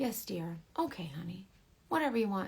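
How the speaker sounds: sweet, nice, agreeable, giving-in tone. Retelling an argument where the husband only answers kindly: imitating husband being nice. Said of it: "Why are you being so nice to me?".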